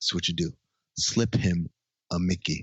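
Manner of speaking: very ominous, darkly foreboding delivery. Retelling a film scene, quoting a character's plan: imitating an ominous tone. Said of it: "he says very kinda ominously".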